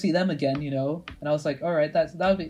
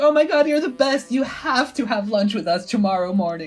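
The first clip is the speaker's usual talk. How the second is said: put-on convincing, high-pitched girls' voice; 6 semitones higher, 3 dB louder than usual. Retelling people who asked to share chips: imitating the girls' voices. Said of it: "how convincing you do their voices".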